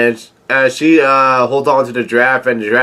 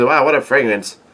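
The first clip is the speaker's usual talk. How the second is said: normal talking voice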